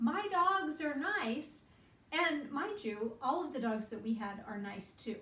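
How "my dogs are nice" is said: play-acted high holler, stretched out. Retelling what he yelled out during the dog walk: imitating someone yelling. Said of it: "And he yells out".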